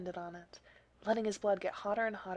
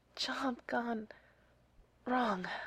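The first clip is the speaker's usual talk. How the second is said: whisper, higher pitch; 3 semitones higher than usual. Narrator reads Neil's answer after being asked what happened to him, whispered. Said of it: "he whispered".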